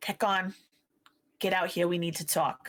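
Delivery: hissing whisper, under the breath. Role-playing, a player voices her character calling her friends to talk, hissing. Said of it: "she hisses".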